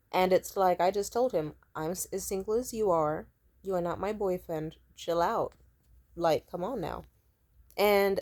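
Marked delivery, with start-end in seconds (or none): none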